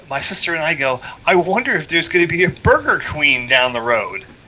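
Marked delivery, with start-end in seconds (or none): 1.2-4.2 put-on sarcastic, wisecracking, swooping sing-song. Speaker retells what she and her sister said after spotting a Dairy King, retelling a sarcastic remark. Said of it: "being the sarcastic scumbag that I am".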